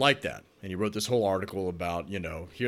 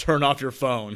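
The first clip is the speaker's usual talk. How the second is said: put-on loud booming shout, much higher; 5 semitones higher, 7 dB louder than usual. Retelling what the teacher called out in a movie theater, retelling a loud boisterous shout. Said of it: "he had a loud, boisterous voice".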